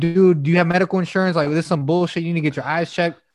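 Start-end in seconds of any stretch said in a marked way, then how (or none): none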